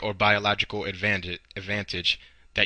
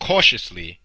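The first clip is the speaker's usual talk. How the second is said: heavy stress on cautiously; 2 semitones lower, 4 dB louder than usual. Giving numbered advice to listeners, with stress on 'cautiously'. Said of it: "emphasis on the word cautiously".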